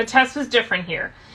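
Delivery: ordinary delivery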